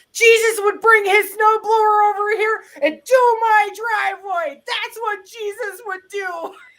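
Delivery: high, loud scream. Retelling snowed-in driveway to neighbors: retelling a scream. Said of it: "And I screamed".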